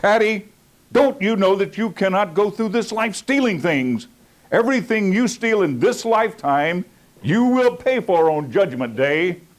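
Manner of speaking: mock stern judge voice. Retelling how a judge lectured a young man on theft: imitating a judge speaking sternly. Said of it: "the judge looked at him very sternly".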